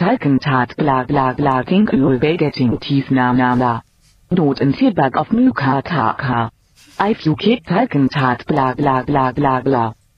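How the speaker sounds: text-to-speech-style German accent. A text-to-speech tool reading typed text, computerised German accent. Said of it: "Can we have some German, please?".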